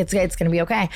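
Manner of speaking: ordinary talk, nothing marked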